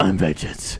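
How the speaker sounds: low, deep, growling voice.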